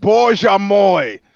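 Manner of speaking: all-out shouting at full volume. Opening a fight preview with a foreign exclamation: shouting as loudly as possible. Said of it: "as loudly as possible".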